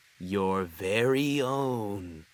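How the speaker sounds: ominous, foreboding storyteller's tone, "own" drawn out. Reading a story, Percy answers Gordon's question, in an ominous tone. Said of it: "Percy said in an ominous tone".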